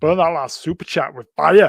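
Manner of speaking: bad, very loud, out-of-practice Scottish accent. Streamer, out of practice, reacting to a super chat in a bad Scottish accent. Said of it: "go on, best Scottish".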